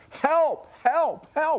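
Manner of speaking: put-on very high, shrill yelling cries. Answering a question about a vivid mental picture, the speaker acts out the cries of children, imitating yelling for help. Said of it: "even yelling".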